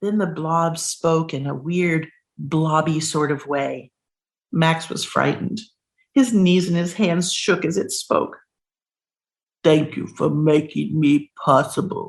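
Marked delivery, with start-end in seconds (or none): 9.6-12.1 slow, frightening, menacing voice, deep and low. Narrator reading the gooey blob's words to a frightened boy, slow, scary, deep voice. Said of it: "said in a slow, scary, deep voice".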